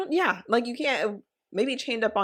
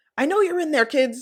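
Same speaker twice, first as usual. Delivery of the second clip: put-on half-yelling, pitched up; 5 semitones higher, 5 dB louder than usual. Retelling a man knocking on Gilbert's door, imitating someone kind of yelling. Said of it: "he was like kind of yelling".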